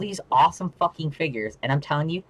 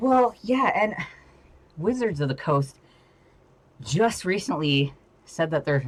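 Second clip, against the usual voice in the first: out of breath, winded, halting and breaking up; 4 semitones higher than usual. Just ran up the stairs carrying heavy books, out of breath. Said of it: "Oh, I'm winded".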